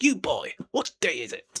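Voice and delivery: posh, sing-song called-out delivery. Speaker pictures Scrooge calling out to a boy, in a posh Scrooge voice. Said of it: "I could be a posh person in something".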